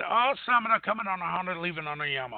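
usual speaking voice

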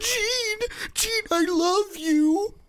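put-on very high, slow, drawn-out sobbing wail. Mocking the movie version of a character: imitating Scott crying. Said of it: "The one that's crying".

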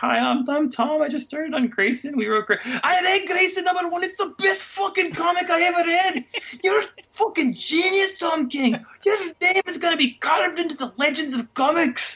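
put-on Scottish accent pitched very high. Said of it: "we have to do the Scottish accent".

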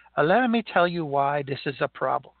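put-on heavy Italian accent. Telling a true story, quoting a man addressing everybody in a heavy Italian accent. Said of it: "with a heavy Italian accent".

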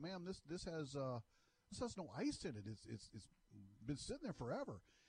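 courteous, careful, soft, polite tone. Retelling what you said to the woman who handed you the drink, acting out being polite. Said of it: "and I'm polite".

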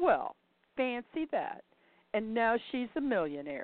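as sarcastic as possible, acted out. Retelling what their daughter said, imitating a very sarcastic tone. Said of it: "in about the most sarcastic tone of voice she could muster".

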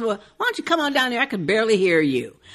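play-acted testy, irritated, rough-spoken delivery. Retelling what Carol says to the boy: imitating Carol sounding irritated. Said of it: "Carol looks so irritated".

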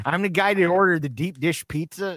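put-on heavy Chicago accent, loud and high. Retelling ordering deep dish pizza for the kids, in a heavy Chicago accent. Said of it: "I just had a Chicago accent the whole time".

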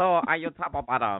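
mock female robot voice. Mimicking how certain men talk, in a robot-like voice. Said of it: "they sound like robots when they talk".

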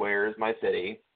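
ordinary talk

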